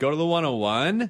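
LA uptalk, one oh one ends on a rise. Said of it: "it also adds up speak".

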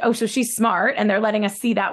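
plain

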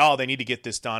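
ordinary talk, nothing marked

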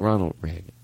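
put-on soft-spoken voice. Retelling a president's answer to Letterman: imitating saying it softly. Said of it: "He said it so softly, like".

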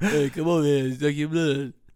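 mumbled, tough-guy vampire character voice. Joking about an unlikely Dracula, do the vampire as Sylvester Stallone playing Dracula.

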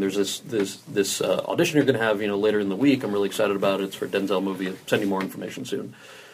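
ordinary delivery

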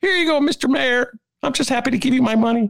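very high, eager, put-on Chicago resident voice. Mocking taxpayers handing money to the mayor: imitating an average Chicagoan. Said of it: "That's my imitation of an average Chicagoan".

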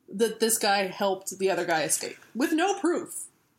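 normal talking voice

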